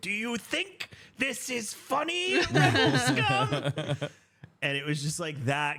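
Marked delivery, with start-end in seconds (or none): 0.0-4.1 acted very high, very slow, swooping yell. Retelling how a cast member scolded a laughing guest: imitating a cast member yelling. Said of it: "a Disney employee is yelling at me".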